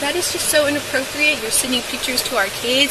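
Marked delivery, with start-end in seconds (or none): none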